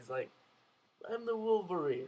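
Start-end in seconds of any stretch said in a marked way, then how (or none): 1.1-2.1 friendly, nice, light voice, pitched up. Retelling how Wolverine says his line to the little girl: imitating Wolverine as a nice guy. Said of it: "He says it like nice guy".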